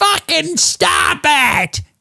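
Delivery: very high-pitched, contained, mild scream. Speaker acts out a lady stopping a war, imitating a woman screaming.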